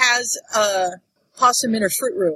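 ordinary talk

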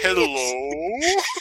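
divine, heavenly voice from above. Picturing Harry in the graveyard hearing a voice: voice from the heavens. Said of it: "a voice from the heavens".

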